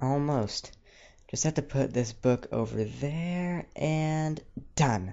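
proud, triumphant, high and drawn out. Twilight, putting the last book away, answers Rainbow: triumphant. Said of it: "Twilight said triumphantly".

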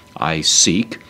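normal talking voice

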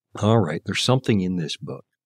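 ordinary talk, nothing marked

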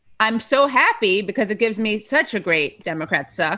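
normal talking voice

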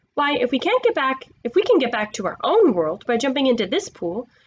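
ordinary delivery

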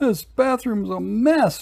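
very high moaned grumble. Narrator voices Louis's mother's line, moaning. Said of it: "moaned Louis's mother".

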